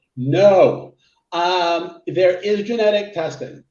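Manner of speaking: very loud, very slow, emphatic, with no drawn long. Answering a listener's question on genetic testing for medications, saying it very loudly. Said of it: "I'm going to say this very loudly".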